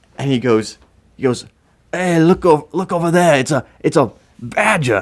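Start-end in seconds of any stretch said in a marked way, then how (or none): 2.0-5.1 clumsy fake Australian accent, pitched up. Speaker retells a man in the bushes pointing out a badger; bad Australian accent. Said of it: "That was probably the worst Australian accent I've ever done".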